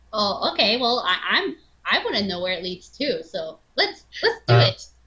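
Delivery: eager, inquisitive house cat voice. In an actual-play game, a player voices the curious cat: curious cat character voice. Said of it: "who's obviously more scientific-minded than [name], / She's like".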